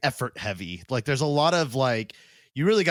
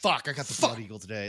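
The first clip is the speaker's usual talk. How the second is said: put-on reluctant complaining tone, quieter; 4 dB quieter than usual. Acting out the torturer given the blood eagle job: imitating a reluctant torturer. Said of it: "And he's like".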